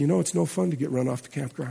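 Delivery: mock sorrowful, low, soft, heavy-hearted sad voice. Recalling what the preacher finally said at the meeting, imitating Venden's sad voice. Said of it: "in just that sad Venden voice".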